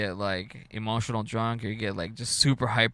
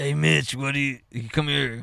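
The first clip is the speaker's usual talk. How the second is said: mock drunken old man voice, higher and louder; 4 semitones higher, 4 dB louder than usual. Imitating a quiet grandpa who got wasted: imitating drunk grandpa. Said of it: "But he would get wasted".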